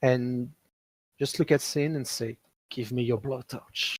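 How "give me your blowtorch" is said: hushed, quiet tone of voice. In a role-play, a player voices a character's line in a hushed tone. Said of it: "in a hushed tone".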